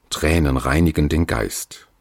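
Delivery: plain reading voice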